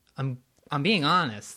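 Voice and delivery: ordinary talk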